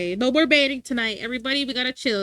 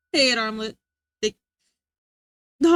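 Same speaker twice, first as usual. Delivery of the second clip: words laughed out, talking through laughter. Looking at submitted memes, laughing while talking. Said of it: "I gotta stop laughing".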